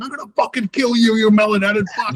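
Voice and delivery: put-on, shrill, very high screaming yell. Retelling Joe stomping down a hallway with a chainsaw: imitating Joe yelling.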